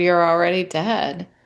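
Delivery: whispering. Retelling looking at one's face in the bathroom mirror: whispering. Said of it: "and I whispered".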